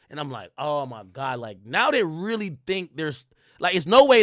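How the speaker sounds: ordinary delivery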